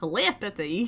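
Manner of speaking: super exaggerated, over-the-top Southern yeehaw country accent. Speaker struggling to pronounce a word tries an exaggerated yeehaw country accent. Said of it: "If I say it with a super yeehaw accent, I can say it".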